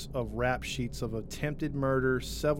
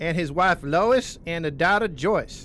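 loud, broad-voiced put-on Missouri accent; 4 semitones higher, 8 dB louder than usual. Telling who owned the town at that time, in a Missouri accent. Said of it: "I love the Missouri accent".

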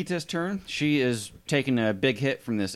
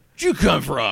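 grunting, orcish voice; 4 dB louder than usual. Voicing an orc character during a tabletop game, orcish voice. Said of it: "But like an orcish".

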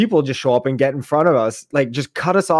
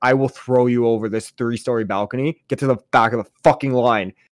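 normal talking voice

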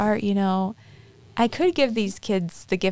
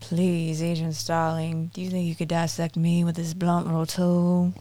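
put-on menacing killer voice, lower pitch; 4 semitones lower than usual. Performing a dramatic monologue for a trick-or-treater: Hannibal Lecter voice. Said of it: "let me tell you about a man named Hannibal Lecter".

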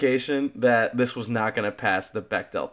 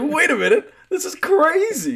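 dazed, stunned, drawn out very high. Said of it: "she's like".

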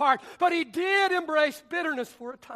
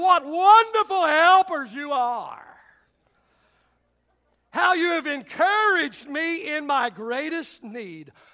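loud, tongue-in-cheek, sarcastic mock praise; 5 dB louder than usual. Reading out a biblical complaint to friends: mock sarcastic praise. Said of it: "he says this with tongue in cheek".

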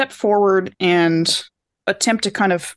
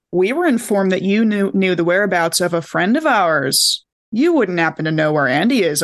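needling, pointed tone, thick with sarcasm. Player suggesting how to ask someone where their friend is; sarcastic pointed question. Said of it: "like that kind of sarcasm".

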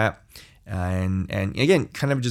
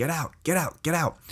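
high, soft inner scream. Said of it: "my soul was just screaming".

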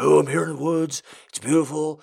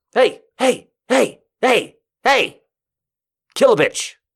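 very high, loud, murderous dog-boss character voice; 9 semitones higher, 5 dB louder than usual. Imagining a serial killer dog boss giving orders: serial killer dog boss voice. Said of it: "Imagine a serial killer dog boss".

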